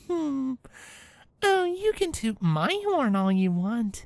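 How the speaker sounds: dreamy, soft cooing. Reading a fan story aloud, a character flirting: cooing dreamily. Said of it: "Twilight cooed dreamily".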